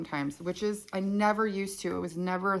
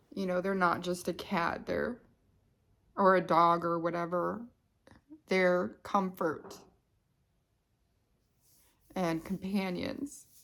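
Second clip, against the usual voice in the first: fighting back tears, choked, tearful voice. Talking on camera about pets as comfort and companions, fighting back tears. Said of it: "I try not to cry".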